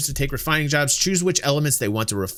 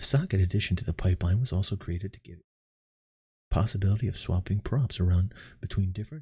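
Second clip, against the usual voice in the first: mock dull reading voice, lower and very quiet; 8 semitones lower, 6 dB quieter than usual. Reading patch notes aloud deliberately without fun: put-on boring very quiet reading. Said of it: "I'm talking so low that my microphone isn't even picking me up".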